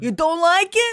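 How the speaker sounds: put-on Staten Island accent. Imitating a Staten Island guy telling someone to leave: put-on Staten Island accent. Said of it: "a Staten Island guy going like".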